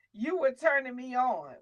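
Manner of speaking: ordinary talk, nothing marked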